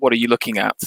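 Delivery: plain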